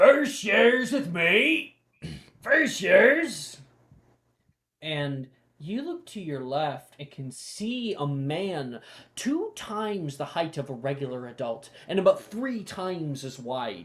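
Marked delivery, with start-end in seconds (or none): 0.0-3.6 booming, very loud, very high-pitched call-out. Narrating a crowded hallway scene, a man calls out in a booming voice. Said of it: "a booming voice call out".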